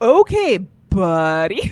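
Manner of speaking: loud, belted, sarcastic tone with swooping pitch. Retelling how an actor's character responds in a scene: imitating Alan Cumming being sarcastic. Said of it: "he's being, like, so sarcastic".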